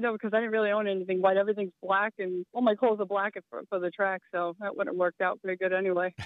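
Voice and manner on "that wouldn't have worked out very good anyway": ordinary talk, nothing marked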